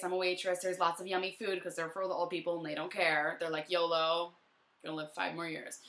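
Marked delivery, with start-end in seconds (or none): none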